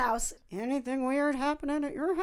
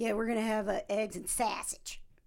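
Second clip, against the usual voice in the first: weird, put-on Chicago accent, done for effect; 4 semitones lower, 5 dB quieter than usual. Imitating a husband talking to someone: imitating husband's chicago accent. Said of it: "my husband has that weird Chicago accent".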